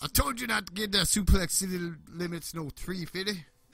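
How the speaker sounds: high, loud, mock scolding voice.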